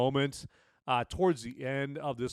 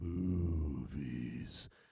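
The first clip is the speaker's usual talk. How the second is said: eerie, slow, creepy, drawn-out delivery; 10 semitones lower, 6 dB quieter than usual. Reading out a promo code for an ad: said real slow, creepy. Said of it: "let me say it real slow".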